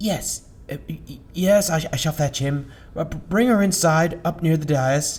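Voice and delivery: very high-pitched, flustered, panicked stammering. In a game, the young man at the door answers about the high priest, panicked stammering. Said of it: "a young man answered the door. / A panicked look set in on the young man's face, and he froze. He mumbled. / a young man answered the door. / a young man answered the door. / Stammered the young acoly".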